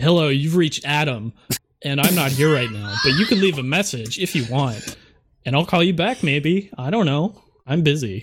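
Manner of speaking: pushy, aggressive, sassy voice full of attitude. Recording a voicemail greeting after being coached, aggressive, sassy tone. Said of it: "I like the aggressive, sassy".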